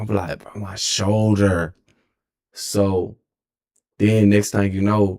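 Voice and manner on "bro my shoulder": ordinary talk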